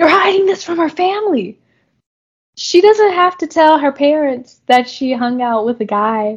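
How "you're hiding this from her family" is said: heated, accusing, high, angry yell. Retelling a contestant who loses his temper: imitating someone yelling. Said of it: "starts yelling".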